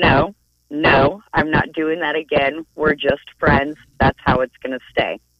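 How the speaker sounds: ordinary talk, nothing marked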